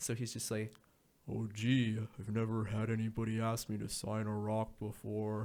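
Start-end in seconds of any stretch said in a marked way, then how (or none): 1.3-5.5 deadpan, flat, unexcited monotone, totally unmoved. Retelling a hockey player's reply to an odd autograph request: imitating a monotone Mark Stone. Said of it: "he's always the same sort of monotone character".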